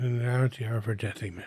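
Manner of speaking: quiet muttering under the breath. Tending an unconscious companion and praying in character: muttering under breath. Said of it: "I'm muttering under my breath".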